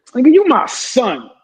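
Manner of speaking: dismissive, belittling, disrespectful tone, high and drawn out. Showing how saying son can sound insulting: disrespectful tone. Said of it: "That's disrespectful".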